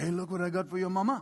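put-on French accent. Retelling what the speaker's dad said while wrapping christmas gifts, imitating dad's french accent. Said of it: "he's French and he talks like that".

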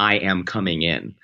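ordinary talk, nothing marked

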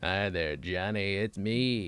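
bad, very slow, dragged-out drawl. Trying the air conditioner's line from the Brave Little Toaster: bad Phil Hartman impression. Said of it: "doesn't sound like Phil Hartman doing Jack Nicholson".

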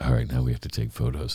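deep, dead flat monotone. Retelling what Shaq said after a bear hug: Shaq monotone voice. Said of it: "he talks in that monotone voice".

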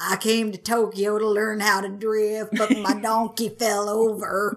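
unhurried, slow, drawn-out southern drawl. Introduced as his best effort: Forrest Gump impersonation. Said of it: "His best Forrest Gump impersonation".

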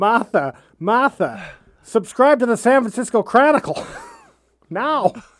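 put-on Australian accent. Joking around, addressing martha in a bad australian accent. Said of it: "I can't do Australian".

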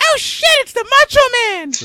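put-on very high, very loud, shrill kid or teen voice. Recalling first seeing the Macho Man in Spider-Man, the speaker reenacts his 14-year-old voice. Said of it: "That was your 14-year-old voice?".

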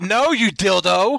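high-pitched screaming. Retelling reacting to a podcast host's reply: imitating own screaming at phone. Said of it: "And I'm screaming at the, at my phone".

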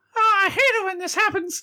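very high-pitched put-on character voice. Voicing Mickey Mouse sitting up with birds circling his head: Mickey Mouse voice. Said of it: "And I swat around until they fly away".

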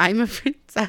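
put-on cute little boy voice.

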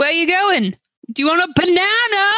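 bellowing very loudly, hollered as if over distance. Calling out in character to a rider on a horse: saying it very loudly. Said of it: "And I say that very loudly".

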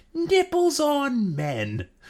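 scornful, swooping, very high contemptuous shriek. Quoting the devil character from Time Bandits: contemptuous scream as Time Bandits devil. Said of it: "with such contempt".

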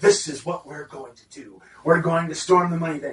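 acted, very confident put-on voice. Acting out a character's lines from a story, in a very confident voice. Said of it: "when he talks very confidently".

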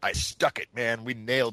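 ordinary delivery

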